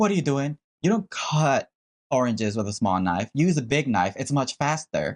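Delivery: condescending, talking-down, lecturing tone. Retelling what the billionaire told her worker cutting oranges, mock-condescending tone. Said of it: "In a condescending tone".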